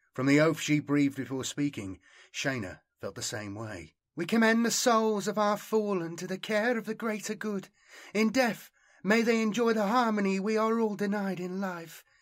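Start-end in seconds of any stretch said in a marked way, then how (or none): 4.2-12.0 reverent tone, pitched a touch high. After a rout, a woman commends the fallen to the greater good: reverent. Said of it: "she said reverently".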